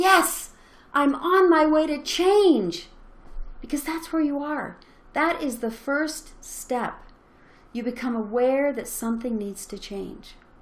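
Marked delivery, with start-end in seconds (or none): 0.0-2.9 high, loud celebratory cheer. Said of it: "celebrate and say".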